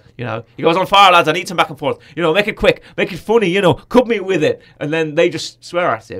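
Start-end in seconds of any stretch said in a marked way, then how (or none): 0.8-4.4 put-on Irish accent, loud, high and raised. Retelling a film scene as the coach: Colin Farrell Irish accent. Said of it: "that's my Irish accent come back there with Colin Farrell".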